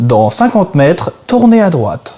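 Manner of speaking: automated car navigation announcement voice. Asked to test a voice, the speaker does a GPS navigation voice. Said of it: "faire par exemple la voix de G P S".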